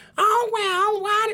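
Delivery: put-on high woman's voice. Imitating mom greeting someone: imitating mom's high voice. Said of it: "She has a really high voice".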